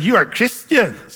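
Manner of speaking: snarky, sarcastic, mocking tone. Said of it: "They said it in a sort of a snarky way".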